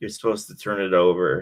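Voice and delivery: very quiet, barely audible, hushed, under the breath. Retelling a buddy's remark to the teacher: imitating a very quiet voice. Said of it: "really quietly".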